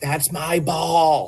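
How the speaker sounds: mock abrupt, sudden, high-pitched shout. Retelling what a woman yelled in the ear: imitating someone yelling. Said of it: "she just yelled in my ear".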